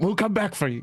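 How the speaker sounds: shouted, calling out. A character calls back to the fae as he runs: calling out while running. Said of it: "he calls out as he runs".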